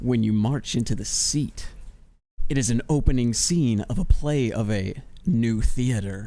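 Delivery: low, seductive, sultry delivery. Asked to read a text aloud in a sultry voice, sultry voice. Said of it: "Can you do it in a sultry voice? I'll do my best".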